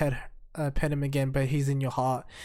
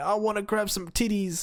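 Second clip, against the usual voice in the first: put-on anime-style scream, higher pitch; 6 semitones higher than usual. Reviewing an anime, the speaker acts out a character's line, mock-screaming as Denji. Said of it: "is just screaming like".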